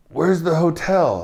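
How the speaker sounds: acted-out high-pitched yell. Retelling a hotel mix-up, imitating a woman yelling at the van driver. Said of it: "she's yelling at the van driver".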